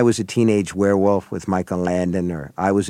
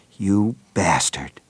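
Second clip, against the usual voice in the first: quivering, held-down low voice, trembling with rage. Author reading from his novel, a woman in rage speaks in a low, trembling voice. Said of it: "she said in a low, trembling voice".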